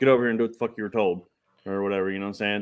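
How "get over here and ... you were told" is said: stern, strict dad voice. Showing what gets said when the kids act up: dad voice. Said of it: ""Use your dad voice."".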